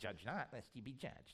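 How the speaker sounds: snide, sneering, mocking delivery. Quoting how people throw back a bible verse, mock sneering tone. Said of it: "And they say it like that, too, that sneery".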